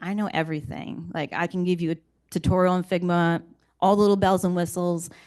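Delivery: normal talking voice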